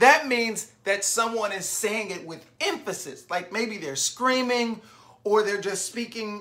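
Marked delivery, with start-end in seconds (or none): none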